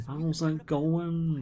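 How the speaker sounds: bad, attempted Manchester accent. Trying out a manchester accent for the other speaker, in a bad manchester accent. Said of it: "I haven't got a very good Manchester accent".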